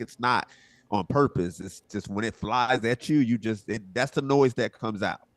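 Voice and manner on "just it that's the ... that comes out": normal talking voice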